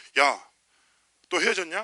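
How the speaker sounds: loud teasing voice, called out.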